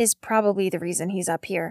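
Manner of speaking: ordinary talk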